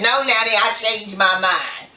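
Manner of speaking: usual speaking voice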